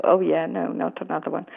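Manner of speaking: ordinary talk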